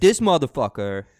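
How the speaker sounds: put-on very loud, abrasive, complaining New York accent. Imitating Tuna complaining: abrasive New York accent. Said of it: "since you don't have the New York accent".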